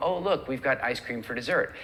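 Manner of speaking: ordinary talk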